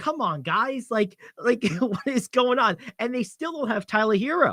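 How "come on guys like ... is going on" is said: yelling, screaming. Recalling watching last night's game, acting out screaming at the television. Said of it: "I'm like screaming at the television".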